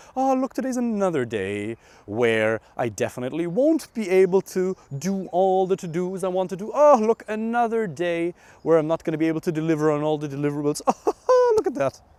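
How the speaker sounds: silly, jokey, high, playful singsong voice. Showing how a self-talk technique sounds: playful funny voice. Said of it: "use his voice like this".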